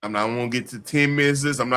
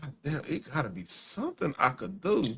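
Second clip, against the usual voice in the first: slow, breathy, hushed musing; 9 dB quieter than usual. Acting out Adam wishing for something to change: acting out Adam. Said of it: "Adam over here like".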